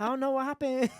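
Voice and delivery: high-pitched mock Chinese accent. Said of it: "actually a Chinese accent".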